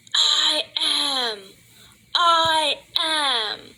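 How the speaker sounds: furious, high, enraged, all-out screaming. Recounting a dream about the president beating his chest, retelling a furious scream. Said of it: "He's screaming".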